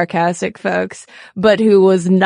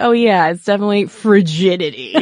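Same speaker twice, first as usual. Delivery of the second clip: dry, mocking, insincere sarcastic tone. Imagining how Freud might have said it: sarcastic Freud imitation. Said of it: "what if he were being sarcastic?".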